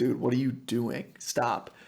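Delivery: normal talking voice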